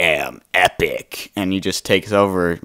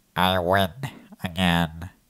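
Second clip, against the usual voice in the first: put-on nasal cartoon voice, quieter; 7 dB quieter than usual. Doing the voice others think the character has: nasal Squidward voice. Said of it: "everybody thinks he has Squidward voice".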